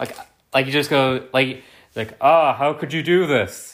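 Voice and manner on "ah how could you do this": completely bored and tired delivery. Imitating how a movie villain's voice actor delivers a line: imitating President Stone's bored voice. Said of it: "He sounds very tired and very bored".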